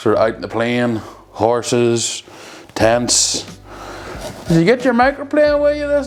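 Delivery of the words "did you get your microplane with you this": fast, very high put-on East Belfast accent. Imagining cowboys out on the plain, asking a question in an East Belfast accent. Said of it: "that's more East Belfast".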